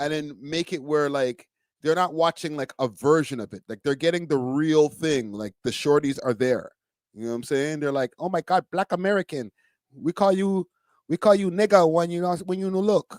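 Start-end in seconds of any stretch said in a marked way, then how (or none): 8.2-13.2 put-on Japanese accent. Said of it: "I did the accent".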